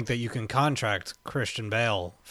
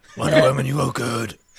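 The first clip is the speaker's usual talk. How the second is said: put-on brooding hero voice, louder; 7 dB louder than usual. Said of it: "Imagine him talking like this to everybody".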